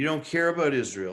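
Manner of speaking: mock sarcastic delivery. Retelling what is said to Democratic-supporting friends: imitating his own sarcastic remark. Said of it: "sort of sarcastically".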